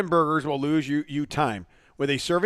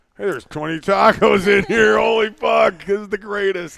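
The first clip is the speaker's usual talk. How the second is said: mock drunken voice, higher and louder; 5 semitones higher, 7 dB louder than usual. Imagining being drunk and finding food: pretend drunk voice. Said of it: "drunk and you're like".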